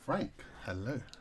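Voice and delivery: very soft, seductive radio voice. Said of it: "that was very, uh, seductive".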